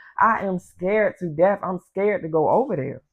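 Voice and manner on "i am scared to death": plain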